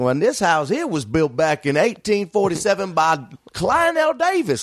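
heavy put-on southern drawl, thick and sing-song. Speaker retells pretending to give a house tour for a YouTube bit, thick southern accent. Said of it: "with a thick southern accent".

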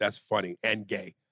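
ordinary talk, nothing marked

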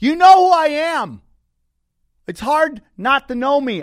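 shouting. Telling the comic that everyone knows him: yelling. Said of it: "I yell like this all the time".

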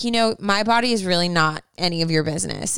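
plain

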